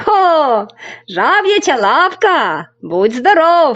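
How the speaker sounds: high, drawn-out, purely delighted exclamation. The crane, asked a question by a boy, exclaims with delight. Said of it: "захоплено вигукнув журавель".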